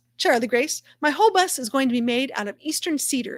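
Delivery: normal talking voice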